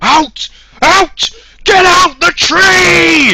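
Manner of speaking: mock yell, very high and very slow. Retelling a video where someone shouts at a cat in the tree: imitating someone yelling at a cat. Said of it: "Like that".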